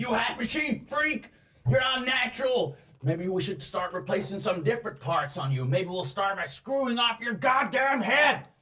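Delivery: shrill, very high, furious screaming. Voicing humans who corner a woman against a wall: screaming abuse. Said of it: "they're screaming at her".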